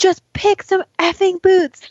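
acted, very high, shrill, at-wits'-end scream. A mother retells her son refusing his boots at the door, retelling a scream. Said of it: "And I just screamed".

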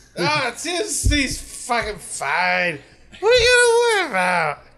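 put-on very slow, shrill, loud drunken slurring. Demonstrating how the follow-up phrase should be said: sounding completely drunk. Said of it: "sound like you're completely fucking inebriated".

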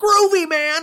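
loud, high-pitched cartoony voice. Mocking a story's writer as if he were talking like Shaggy. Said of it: "It sounds like Shaggy".

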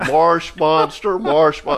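plain

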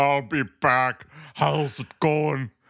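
slow, drawn-out Midwestern accent blended with another. Showing the combo impression again: Midwestern Schwarzenegger impression. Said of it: "Midwestern Schwarzenegger".

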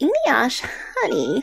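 put-on elderly woman's voice. Jokingly asked to say it in an old lady voice, speaker tries: old lady voice. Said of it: "can you do that in an old lady voice?".

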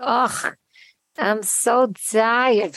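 put-on very slow, drawn-out old man voice.

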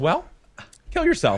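put-on casual, totally nonchalant, offhand tone. Retelling a mother's reply to a plan, imitating a nonchalant remark. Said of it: "Totally nonchalant".

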